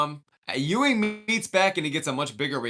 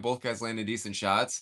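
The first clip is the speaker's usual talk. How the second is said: ordinary delivery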